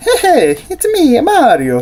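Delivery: very high, slow, swooping sing-song cartoon voice. Reviewing a Mario figure, the speaker briefly imitates him: terrible Mario impression. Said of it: "Sorry for my terrible Mario impression".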